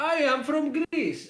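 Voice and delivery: put-on very high, slow, drawn-out Greek accent. Retelling a game character introducing himself, in a Greek accent. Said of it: "this guy was supposed to be Greek".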